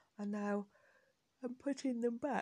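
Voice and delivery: spoken through a yawn. Recording a podcast piece near bedtime, yawning. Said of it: "excuse me, I'm yawning".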